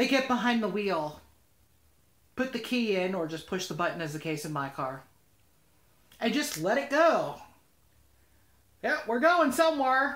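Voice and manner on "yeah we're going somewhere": bad, cheap put-on Southern accent, pitched up. Describing people who never learned to drive: bad Southern accent. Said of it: "I use a bad Southern accent".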